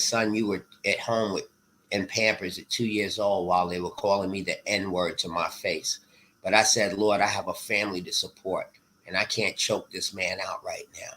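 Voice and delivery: ordinary talk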